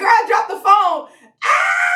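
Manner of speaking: acted-out thrilled, high, excited mild shouted burst. Speaker retells her mom picking up the phone to her news, retelling mom's excited scream. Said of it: "I started screaming in my ear".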